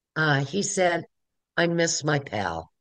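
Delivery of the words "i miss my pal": slow, touching, very low half-whisper. Recalling words he heard as a young kid: retelling a low, half-whispery voice. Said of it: "in this very low, whispery voice".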